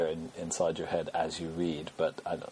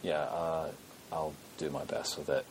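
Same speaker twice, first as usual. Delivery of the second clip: low, soft, sensible voice. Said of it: "That's a very sensible, sensible voice".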